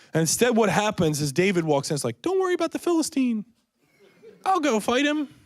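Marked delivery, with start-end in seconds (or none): 2.3-5.3 squeaked out, very high pitch. Retelling a Bible story, the speaker voices a boy volunteering to fight in a Mickey Mouse voice. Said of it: "I don't know why he sounded like Mickey Mouse".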